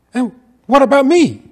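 mock very high, very loud, shrill indignant outburst. Retelling a scene where a lover is left behind: imitating an indignant man. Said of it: "he says indignantly".

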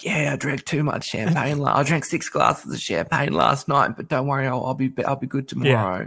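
coarse, croaky voice. Retelling what Tiffany told the judges: imitating Tiffany's croaky voice. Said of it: "she's got the croaky voice and she goes".

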